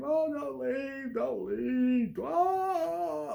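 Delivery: put-on very high, drawn-out, begging, crying wail. Retelling how the kids begged their parents not to leave: imitating a yelling, crying fit. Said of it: "We yelled and cried and screamed".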